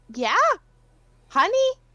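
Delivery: very high, loud, squeaky hamster voice. A player voices a hamster character in a role-playing game, hamster character voice. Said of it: "Can hamsters talk to horses?".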